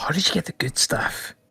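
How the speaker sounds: hushed, breathy whisper. Voicing a kobold character who speaks to the players, whispering. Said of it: "The sp- the speaker sort of whispers to you".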